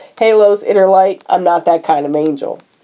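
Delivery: ordinary delivery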